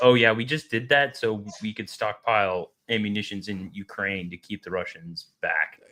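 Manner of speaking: usual speaking voice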